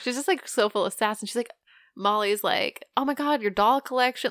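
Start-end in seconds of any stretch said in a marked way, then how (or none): 3.0-4.3 put-on excited, eager voice. Retelling Molly finding a kid's toys: imitating Molly's excited voice. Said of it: "she's getting excited over these".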